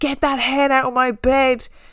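put-on high, panicked, freaked-out screaming cry. Retelling a sleepwalking nephew waking up: imitating someone screaming. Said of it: "screaming because he thought there was a hen".

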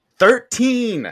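high, loud, over-enunciated "thirteen".

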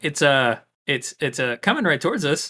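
ordinary talk

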